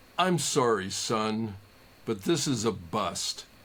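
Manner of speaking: very deep, gentle, slow, kind voice. Recalling police breaking up a frat party, he quotes the cop: imitating a deep, kind voice. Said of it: "very deep voice, very kind voice".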